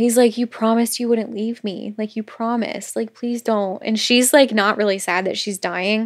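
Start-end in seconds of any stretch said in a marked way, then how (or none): 0.4-3.8 put-on pleading, begging voice, quieter. Retelling a scene where he begs her not to leave: imitating someone begging. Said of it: "He's, like, begging her not to leave".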